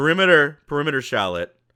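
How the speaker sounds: shouting. Game narrator voices her call as the player walks away: yelling. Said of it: "you just hear yell perimeter".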